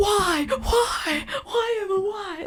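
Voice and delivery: put-on anguished begging, very high, slow and drawn-out. Retelling a man begging to kiss her, imitating agonized pleading. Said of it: "Like he's like in agony".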